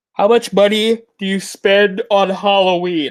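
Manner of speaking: through a yawn. Speaker answering questions about halloween spending: yawning. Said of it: "Sorry, I keep yawning".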